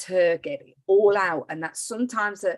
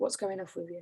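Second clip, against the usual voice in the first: very quiet, hushed, lowered voice; 13 dB quieter than usual. Retelling a question put to someone being nasty: retelling own lowered voice. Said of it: "I just lowered my voice and just said".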